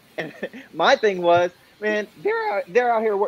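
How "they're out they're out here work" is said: voice breaking and cracking mid-phrase. Speaking up for crew members treated badly, the speaker's voice cracks. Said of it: "my voice cracked somehow".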